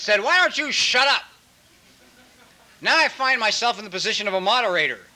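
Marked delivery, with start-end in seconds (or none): 0.2-1.2 mock screaming in a small voice. Speaker recounts a little inner voice that screamed at them, retelling a little voice screaming. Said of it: "this little voice screamed at my mind".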